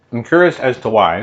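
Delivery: muffled words through a mouthful of food. Talking about plums and nuts as snacks: talking with food in mouth. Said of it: "Got food in my mouth".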